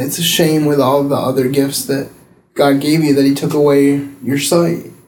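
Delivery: ordinary talk, nothing marked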